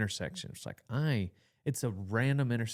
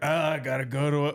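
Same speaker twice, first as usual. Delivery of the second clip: mock high, raised, grudging, put-upon grumble; 5 semitones higher, 7 dB louder than usual. Imitating someone who pretends not to enjoy going: imitating Cole's reluctant grumble. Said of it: "Cole likes to act like he doesn't enjoy going".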